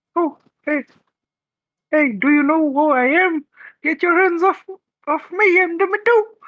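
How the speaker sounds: very high, squeaky cartoon-mouse voice. A streamer announces their Demi Do voice and introduces themself in it. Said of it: "That sounded like Mickey Mouse".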